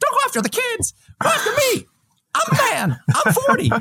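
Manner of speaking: very high, lively, swooping voice. Retelling how a man answered attacks on the kids, imitating a really high voice. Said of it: "He's got this really high voice too".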